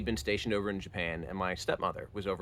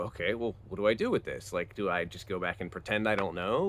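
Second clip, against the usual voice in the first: usual speaking voice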